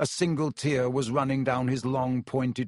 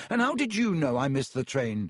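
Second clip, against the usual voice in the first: ordinary delivery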